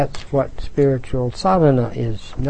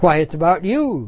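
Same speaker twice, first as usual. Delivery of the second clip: crowing, triumphant, victorious tone; 3 semitones higher than usual. A character answers the little girl's question, exclaiming triumphantly. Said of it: "Tweedledee exclaimed, clapping his hands triumphantly".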